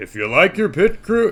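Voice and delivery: very high, loud, bad, botched put-on voice. Read out what the sign said, attempting it as a failed Barack Obama impression. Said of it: "I got to do it. ... I can't do Obama".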